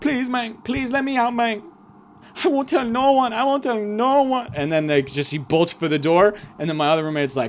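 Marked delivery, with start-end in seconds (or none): 0.0-4.5 put-on Mexican accent, higher. Retelling a guy begging to be let out: imitating a Mexican accent. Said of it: "another Mexican guy with the accent and stuff".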